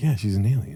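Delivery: hushed, quiet stage whisper aside. Recalling half-whispering to people they go to the movies with, retelling a half-whisper. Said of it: "you're just whispering like".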